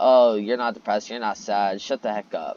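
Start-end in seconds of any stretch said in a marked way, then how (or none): none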